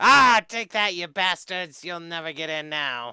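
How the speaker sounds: loud, booming, high, drawn-out goblin voice. Voicing the goblin for the other players, who asked what he said: goblin voice. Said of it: "The goblin just laughs his ass off. He says".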